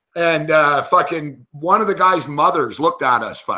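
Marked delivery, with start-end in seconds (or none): none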